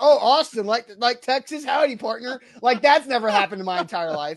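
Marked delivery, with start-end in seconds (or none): 0.0-2.4 teasing, mocking, jokey wisecrack tone. Retelling how people joke about a first name: imitating someone teasing. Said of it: "I've never heard somebody be like".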